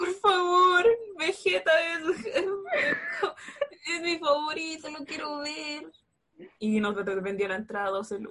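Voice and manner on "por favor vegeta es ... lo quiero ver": high, tearful voice breaking into sobs. Retelling how a kid begged the ticket reseller, imitating a crying kid's plea. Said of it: "se puso a llorar y le dijo al revendedor".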